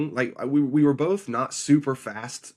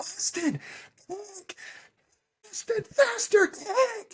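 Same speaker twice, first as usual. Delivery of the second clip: urgent high-pitched yelling. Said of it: "I'm yelling".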